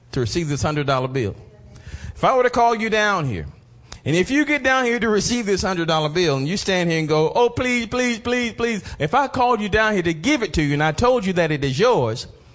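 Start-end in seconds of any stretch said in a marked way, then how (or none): 7.3-8.8 high-pitched, repeated, begging pleading voice. Acting out someone called up to receive a $100 bill, mock begging. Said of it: "beg me and plead for me".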